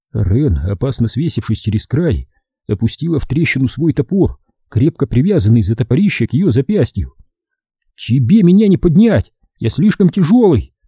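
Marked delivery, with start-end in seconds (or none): 7.9-10.6 protesting tone, higher pitch. Torok, down in an ice crack, answers Ren as she lowers her axe: protesting. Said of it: "возразил Торок".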